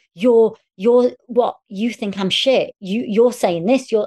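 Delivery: mock screaming fit. Apologizing to Barney for how they behaved at rehearsals, the speaker is retelling their own past screaming.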